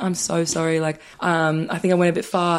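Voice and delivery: ordinary talk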